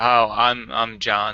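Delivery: mock put-off, gloomy, reluctant tone. Introducing yourself on a podcast after the co-host's greeting: mock put-off, reluctant tone. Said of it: "You seem so put off by having to introduce yourself".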